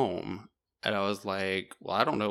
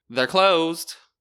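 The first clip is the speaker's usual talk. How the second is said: very loud, high, called-out shout; 9 semitones higher, 11 dB louder than usual. Retelling a little old lady yelling at the speaker: retelling a yell. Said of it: "she like yells at me".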